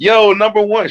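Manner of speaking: put-on happy, very high-pitched New York accent. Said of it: "She got a New York accent".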